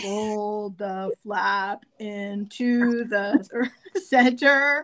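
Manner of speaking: mock, exaggeratedly slow, drawn-out speech. Mimicking how she reads the folding steps aloud; slow talk as if to the deaf. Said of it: "Like she's talking like I'm deaf".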